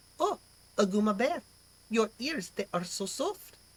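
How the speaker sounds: fake French accent. Trying out accents, the speaker attempts French; bad French accent. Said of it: "this is my French accent".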